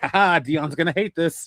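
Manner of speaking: play-acted laughing cackle through the words. Retelling making background parts for a bit, imitating own cackling. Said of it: "cackling away like".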